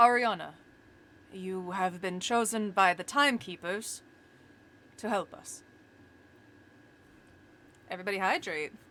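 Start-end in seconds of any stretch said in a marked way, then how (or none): 0.0-5.6 deep, low voice. Voicing a large cloaked figure addressing a player: deep voice. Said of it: "he speaks in a, uh, deep voice".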